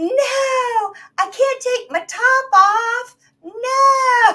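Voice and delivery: put-on very high, very slow, shrill, drawn-out yelling. Retelling a woman at a hotel patio refusing the crowd: imitating a woman screaming. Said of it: "she's screaming".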